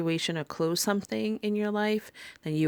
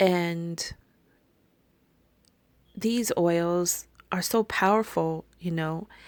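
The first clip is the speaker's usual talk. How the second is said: on the verge of tears. Telling listeners about newly created oils, on the verge of tears. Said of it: "I feel like I want to cry right now".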